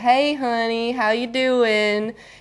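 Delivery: colloquial Southern accent, Tennessee-Georgia style. Speaker showing how they greet people back in Tennessee, Southern Tennessee/Georgia accent. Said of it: "I've kind of lost a lot of my accent, but as soon as I go back to Tennessee or to Georgia".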